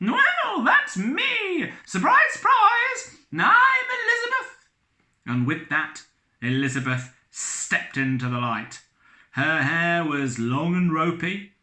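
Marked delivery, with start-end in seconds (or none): 0.0-4.6 very high, loud squeaky voice. Reading a story, a strange visitor reveals herself to the captain: high-pitched visitor voice. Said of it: "said the figure in a high-pitched voice".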